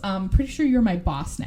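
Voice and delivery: ordinary talk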